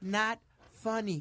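understated, low-key, toned-down delivery. Telling another speaker his joke isn't funny, in a quiet low voice. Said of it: "de voz bajita".

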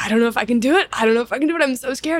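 put-on tearful, scared crying voice. Retelling words said to a producer before going on stage: imitating own past crying. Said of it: "crying to him".

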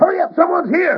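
panicked shouting. Calling for a light after a thief escapes in the dark: yelling in panic. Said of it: "Now stop your yelling like that".

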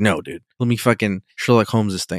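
ordinary delivery

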